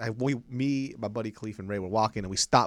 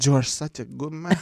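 mock drunk man speech, higher and louder; 3 semitones higher, 5 dB louder than usual. Retelling what a very drunk man kept saying: imitating a drunk man. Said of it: "this guy was so drunk".

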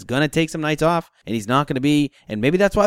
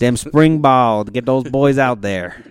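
clumsy, bad put-on Southern accent; 3 semitones lower, 4 dB louder than usual. Talking about Georgia football and spring ball, in a bad Southern accent. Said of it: "That was a bad Southern accent".

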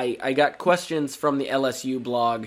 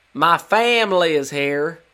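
forced, loud, slow, drawn-out fake Southern drawl; 4 semitones higher, 7 dB louder than usual. Retelling a coach's halftime introduction: imitating Brian Kelly's fake Southern accent. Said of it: "he just tries to throw on a Southern accent and says".

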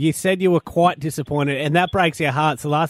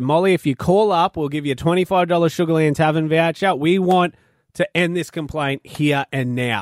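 ordinary talk, nothing marked

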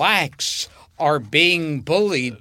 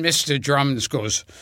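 ordinary delivery

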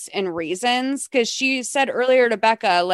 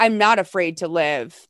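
put-on very stern, firm, unbending voice; 6 semitones lower than usual. Retelling a movie scene where she answers him: imitating a stern reply. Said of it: "very stern".

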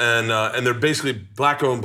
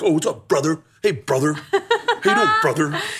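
high, sing-song, teasing, childish mocking; 5 semitones higher than usual. Retelling how his daughters mock his greeting: imitating daughters mocking him. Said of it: "my daughters mock it".

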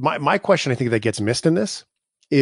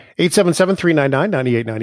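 louder, higher, excited yelling. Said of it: "I might have been excited".

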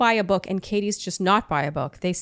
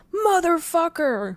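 higher, put-on scream; 8 semitones higher than usual. Retelling another speaker's reaction at the rose ceremony: imitating a scream. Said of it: "And you screamed".

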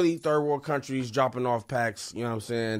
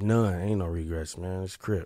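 voice dropped, softer; 5 semitones lower than usual. Answering a question about a biggest regret after a silence, voice drops down. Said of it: "your voice went down like four decibels".

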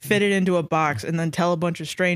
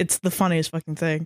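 ordinary talk, nothing marked

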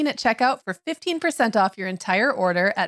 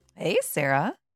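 croaking, cackling witch voice; 5 semitones lower, 4 dB quieter than usual. Greeting the other speaker early in the morning: croaky voice like a cackling witch. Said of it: "I sounded like a cackling witch".

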